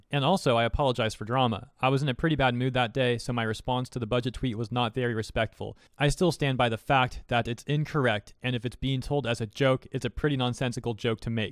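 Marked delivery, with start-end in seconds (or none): none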